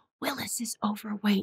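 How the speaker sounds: hushed, confiding voice. Retelling what the vet told the owner, mimicking the vet's lowered voice. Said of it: "the vet lowered his voice and said".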